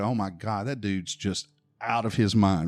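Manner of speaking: ordinary delivery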